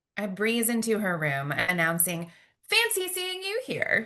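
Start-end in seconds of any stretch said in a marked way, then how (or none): 2.7-4.1 forced, too-bright, overly cheery, very high voice. Breezing into her mother's hospital room to greet her: overly cheery voice. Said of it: "in an overly cheery voice".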